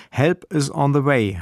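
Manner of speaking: normal talking voice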